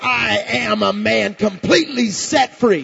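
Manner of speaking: slow, screamed-out shout in a man's voice. Retelling what he screamed out once set free: imitating a scream in a man voice. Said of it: "screamed out with a man voice".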